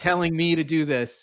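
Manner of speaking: put-on yelling. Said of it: "you start yelling at me like".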